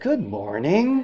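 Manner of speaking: sweetest, syrupy, sugary-sweet voice. Retelling greeting someone giving her the cold shoulder: retelling a sweet greeting voice. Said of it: "in my sweetest manifester voice".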